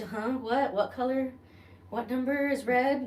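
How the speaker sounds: high, slow, stoned-sounding confusion.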